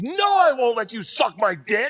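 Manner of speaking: put-on very high, drawn-out top-of-lungs shout. Telling a ninth-grade story, acting out a guy's yell at the top of his lungs. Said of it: "at the top of his lungs goes".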